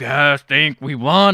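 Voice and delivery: put-on deep actor voice. Retelling a movie scene, imitating Matthew McConaughey's voice. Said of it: "he has the same voice he has in every movie".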